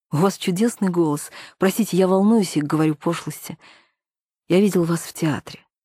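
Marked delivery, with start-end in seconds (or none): none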